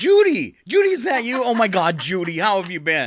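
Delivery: startled, swooping cry of surprise. Host demonstrating how to greet someone named judy, crying out in surprise. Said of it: "Cry out in surprise".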